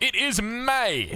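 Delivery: high, slow, drawn-out announcer delivery.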